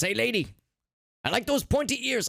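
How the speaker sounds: clumsy, bad put-on cartoon voice, pitched high. Reading out a drawn comic in a bad Wario voice. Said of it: "I can't do a Wario voice".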